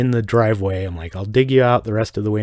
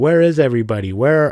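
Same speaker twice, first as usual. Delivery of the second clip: heavy put-on Chinese accent, halting broken English; 4 semitones higher, 4 dB louder than usual. Retelling a woman's call on the cell phone asking where everybody is, in put-on broken-english accent. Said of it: "I'm sorry, I don't want to do an accent".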